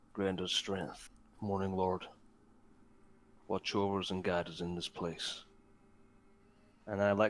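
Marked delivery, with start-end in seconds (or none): 0.2-5.4 soft muttering under the breath. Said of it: "kind of under my breath, I say a slight prayer".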